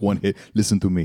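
low, put-on Austrian accent voice. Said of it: "Arnold Schwarzenegger".

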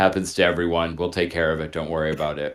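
low, flat, dry, matter-of-fact put-on deadpan. Retelling the echocardiogram technician's reply to the speaker, imitating a deadpan delivery. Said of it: "she literally looks at me with this deadpan face and she goes".

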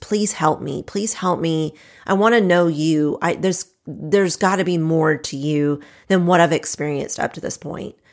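put-on tearful, crying, pleading voice. Retelling begging god on knees in the office: retelling a tearful plea. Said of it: "literally in tears".

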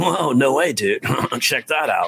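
spaced-out, laid-back stoner dude voice. Demonstrating a character voice he used to do, based on a guy from school: Brian Stark stoner voice. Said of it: "a bit of a stoner voice".

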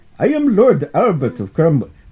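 clumsy, crude, put-on Indian accent. Storyteller voicing a character introducing himself; Lord Albert in Indian accent. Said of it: "it's kind of a racist Indian accent".

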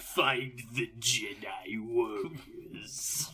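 very quiet, low, hushed emperor voice. Told to do it, the host does the Emperor Palpatine voice for a returning guest. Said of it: "the Emperor Palpatine voice".

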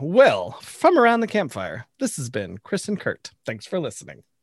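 polished, professional radio announcer voice. Closing out the show, the sign-off in a professional radio voice. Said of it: "cue professional radio voice".

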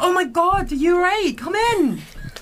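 put-on Scottish accent. Playing a character in a tavern role-play scene: Scottish accent. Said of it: "I'm doing a Scottish accent".

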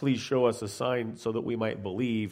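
sincere, earnest, curious tone.

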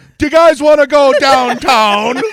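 very high, very loud, shrill, failed Jamaican accent. Told to do a jamaican, the speaker attempts a bad jamaican accent. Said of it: "That was basically kind of Australian".

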